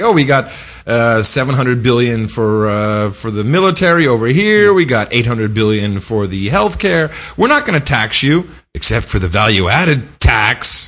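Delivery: ordinary talk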